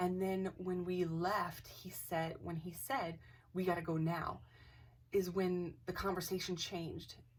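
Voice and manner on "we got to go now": ordinary delivery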